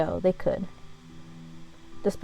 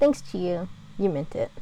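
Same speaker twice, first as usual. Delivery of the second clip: usual speaking voice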